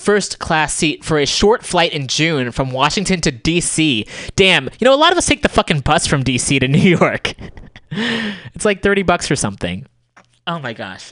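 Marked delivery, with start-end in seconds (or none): 4.4-11.1 exasperated, riled-up, high-pitched worked-up ranting. Reacting to a report on an official's costly travel, worked up. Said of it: "I'm gonna calm down".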